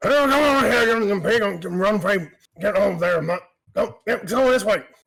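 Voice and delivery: loud, high-pitched hollering. Narrating a scene for listeners, voicing a farmer stepping out of a barn: farmer yelling at pigs. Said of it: "You hear him yelling at".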